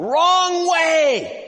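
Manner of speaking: put-on irate shout, very high, drawn way out. Illustrating a point, the speaker imitates a driver irately yelling at you. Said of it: "he irately yells to you".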